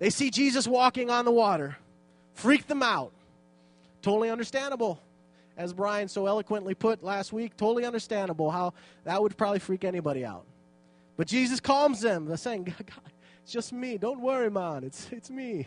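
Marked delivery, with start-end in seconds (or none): 12.6-15.7 put-on gentle, unhurried Jamaican accent. Retelling the Bible story, Jesus calms the frightened disciples, in a Jamaican accent. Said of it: "in his Jamaican accent".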